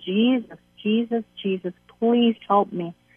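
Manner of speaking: mock crying plea. Recalling being terrorized at eighteen, retelling crying out to Jesus. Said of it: "And I was just crying".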